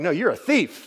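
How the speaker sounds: blunt, point-blank delivery with no softening. Acting out a friend who just comes right out and says it: imitating blunt accusation. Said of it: "this tone".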